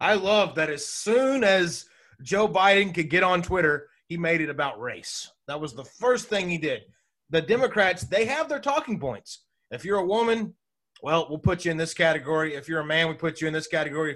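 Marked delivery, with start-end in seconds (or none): 0.0-6.8 openly sarcastic, sneering tone. Speaker announces they are being sarcastic, then makes the remark, sarcastic. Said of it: "I'm being sarcastic here".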